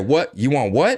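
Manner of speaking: stern, menacing, threatening father voice. Speaker acts out a dad coming home to pop his belt, acting as dad. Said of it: "daddy to come home and pop that belt and say".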